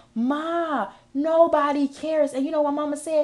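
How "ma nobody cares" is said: mock tearful crying with drawn-out ma. Retelling a memory of crying to mama: imitating own past crying. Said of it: "I remember crying to my mama like".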